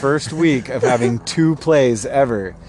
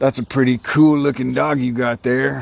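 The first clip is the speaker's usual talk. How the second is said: sinister, creepy tree voice. Acting out the creepy tree calling to an old man: creepy tree voice. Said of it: "That was creepy".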